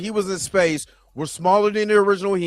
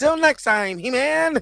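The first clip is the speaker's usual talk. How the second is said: put-on cartoon villain voice, higher pitch; 6 semitones higher than usual. Imitating someone trying the cartoon voice: Skeletor voice. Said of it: "if Skeletor sounds like that".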